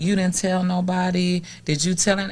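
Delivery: plain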